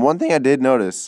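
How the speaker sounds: voice cracking. Commenting on a game attack while the voice cracks. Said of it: "my voice cracked there".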